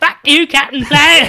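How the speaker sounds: put-on high, loud bogan Australian accent, belted out. Joking about a bogan version of Captain Planet at Bunnings; bogan Captain Planet voice. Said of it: "And a mullet and a Bogan accent".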